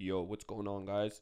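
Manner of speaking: fake deep voice. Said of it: "Try it".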